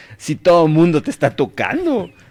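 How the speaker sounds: loud, high, exasperated voice. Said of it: "ya me imagino a Pedro".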